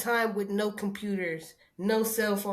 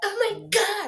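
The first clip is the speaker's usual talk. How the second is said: put-on very high, exasperated, childlike meltdown cry; 10 semitones higher than usual. Retelling a niece's reaction to losing her phone: imitating a child's meltdown. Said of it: "she literally had a whole meltdown".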